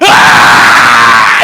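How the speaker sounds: very loud bawling infant crying. A parent shows how their own baby cried, unlike other babies, imitating a baby's very loud cry. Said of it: "내 아이는 어떻게 울지 아세요? ... 애가 목소리가 너무 크니까".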